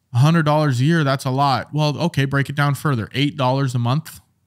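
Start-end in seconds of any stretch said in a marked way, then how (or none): none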